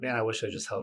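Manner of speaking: ordinary talk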